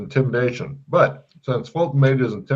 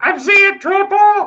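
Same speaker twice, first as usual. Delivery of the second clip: frantic, panicked elf cry, very high; 7 dB louder than usual. Voicing a panicking elf who sees three Santas: panicked elf exclaiming. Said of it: "One goes".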